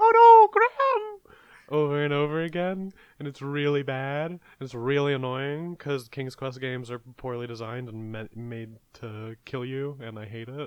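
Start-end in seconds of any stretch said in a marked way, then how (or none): 0.0-1.3 very high, loud, piercing shrill scream at top of range. Describing a game character who screams over and over, imitating a high-pitched scream. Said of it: "screaming in a very high-pitched voice".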